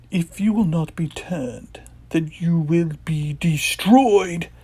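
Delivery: acted villain character voice. Acting out a toy figure scene zapping Luke: attempted Emperor voice. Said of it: "I can't do the Emperor's voice".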